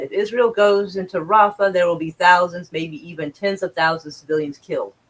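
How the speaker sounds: ordinary talk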